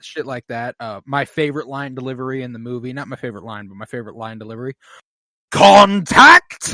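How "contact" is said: very high, shrill, very loud shout. Quoting a favorite movie line delivery: imitating a yell of Contact. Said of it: "Whenever she yells that".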